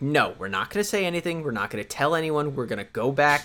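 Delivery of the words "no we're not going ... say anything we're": usual speaking voice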